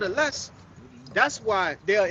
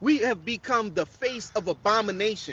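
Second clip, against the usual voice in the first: ordinary delivery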